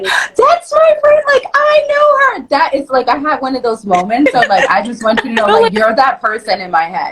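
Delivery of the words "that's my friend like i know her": put-on, very high, thrilled, excited squealing scream. Telling a friend about seeing her Super Bowl commercial, retelling excited screaming. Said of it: "I started screaming like".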